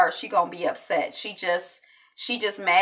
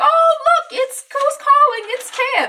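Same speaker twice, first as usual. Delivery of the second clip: very high, drawn-out, fake cheerful voice; 7 dB louder than usual. Retelling a character answering a call from his brother: imitating forced upbeat happy tone. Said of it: "trying to be all upbeat and happy".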